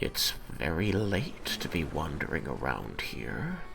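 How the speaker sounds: said in a low voice. Narrator voicing a man who stops writing and tilts his head, low voice. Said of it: "he'll say in a low voice".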